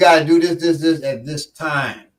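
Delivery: plain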